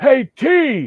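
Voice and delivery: play-acted loud, shrill, very high holler. Retelling how someone in the crowd called out to a celebrity: imitating someone yelling. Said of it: "someone just yelled out".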